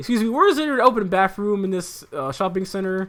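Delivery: high-pitched yell, projected across a distance. Retelling a customer at the front of the store: imitating a man yelling. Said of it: "he's yelling at me".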